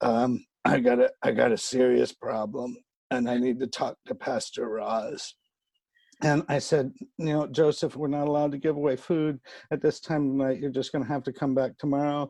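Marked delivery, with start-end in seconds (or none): 0.0-5.3 rough, gravelly voice, very slow. Retelling what a man said when asking to see the pastor, imitating Joseph's gravelly voice. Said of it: "he had a real gravelly voice and he said".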